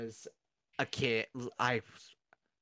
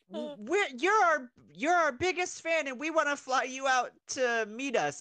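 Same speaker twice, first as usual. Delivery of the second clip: put-on obnoxious voice, much higher and louder; 14 semitones higher, 6 dB louder than usual. Retelling a prank call from callers pretending to be the Olsens, imitating an obnoxious voice. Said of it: "talking in the most obnoxious voice".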